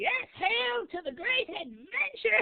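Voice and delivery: court jester character voice. Game master voices a jester heard in the background of the town speech, jester voice. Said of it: "You hear a voice from a jester".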